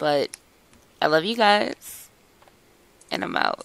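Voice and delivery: voice that sounds sick and unwell. Signing off to the group, sounding sick. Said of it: "I'm sorry I sound like hell".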